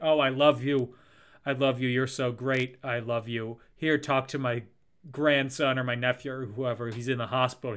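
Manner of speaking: usual speaking voice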